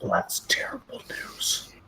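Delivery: low voice, hushed, almost a whisper. Player character reacting to news about a human companion, in a low voice. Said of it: "I say in a low voice".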